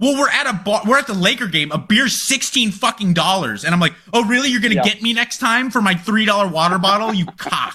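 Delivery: worked-up, furious, angry rant. Co-host venting to the others on the show, an angry rant. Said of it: "You sound angry".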